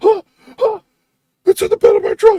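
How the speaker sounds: put-on frightened outcry. Retelling how a man sounded, speaker imitates him sounding genuinely scared. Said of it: "he sounds genuinely scared".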